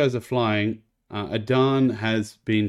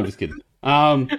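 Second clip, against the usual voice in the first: plain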